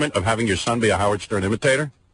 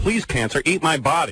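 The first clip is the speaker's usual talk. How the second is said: ordinary talk, nothing marked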